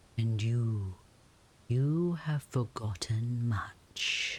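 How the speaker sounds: snake voice dropping low. Narrator reading a snake's words to the listener, in a low snake voice. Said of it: "The snake's voice drops low".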